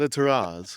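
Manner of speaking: "terrace" said with a slight put-on French accent. Calling a nice deck a terrace, said in a put-on French accent. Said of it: "say it with with a bit of French flair to it".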